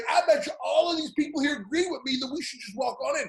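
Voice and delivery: high, worked-up, screaming rant. Retelling a man demanding to walk in, addressing everyone around: retelling a man screaming. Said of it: "And he's screaming at the".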